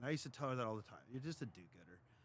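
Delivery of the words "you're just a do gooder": dry, sarcastic, jabbing tone. Retelling what was often said to mom: imitating own sarcastic remark. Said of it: "Just sarcastically".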